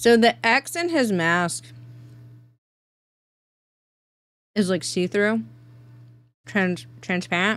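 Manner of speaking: speaking with mouth full. Describing a character's mask while eating bread, talking with mouth full. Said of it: "Sorry, I'm eating bread".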